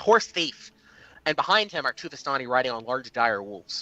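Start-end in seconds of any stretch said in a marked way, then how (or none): 0.0-0.7 high, ringing shout. Voicing a rider chasing a horse thief: shouting "horse thief". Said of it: "he shouts".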